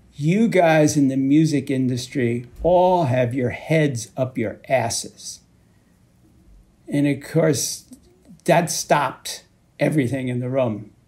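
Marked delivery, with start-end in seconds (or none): none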